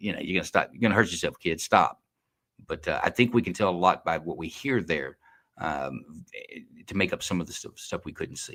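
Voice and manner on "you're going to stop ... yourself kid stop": put-on mocking, taunting voice. Retelling what an officer said to a fleeing man: imitating an officer taunting. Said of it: "he was almost taunting the guy".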